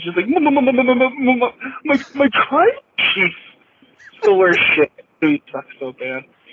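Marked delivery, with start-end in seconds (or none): 0.3-4.9 high stutter, stuck repeating "my". Mocking a wrestling figure's recent stuttering: imitating Heyman stuttering. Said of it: "him stuttering".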